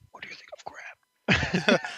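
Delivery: hushed, slow, whispered aside. Acting out a whispered question to a lord: whisper.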